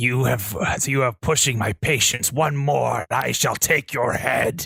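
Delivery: growled, snarling demon voice. Game narrator voices a demon answering a player's question, snarling demon. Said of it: "The demon snarls at this".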